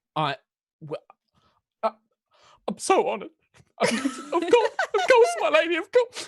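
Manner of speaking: choked-up crying, very high and loud. A baker character, honored by her lord and lady customers, answers tearful and choked up. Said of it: "she starts genuinely like crying".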